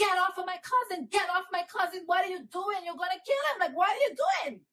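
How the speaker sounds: play-acted child's frantic, high, pleading screaming. Retelling a childhood memory of screaming at the police: imitating a child screaming. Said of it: "I start screaming".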